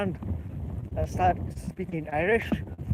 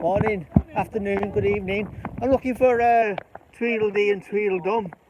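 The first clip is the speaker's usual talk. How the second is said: loud, slight, put-on fake Irish accent; 2 semitones higher, 6 dB louder than usual. Stopping young ladies on the street to ask them something, in a put-on Irish accent. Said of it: "my little Irish accent".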